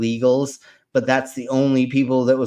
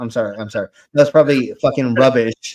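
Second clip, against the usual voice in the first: normal talking voice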